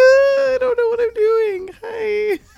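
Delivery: very high, slow, clumsy try-hard sexy voice. Imitating how Max would try a sexy voice, imitating Max's sexy voice attempt. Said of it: "That would be Max trying to do sexy voice".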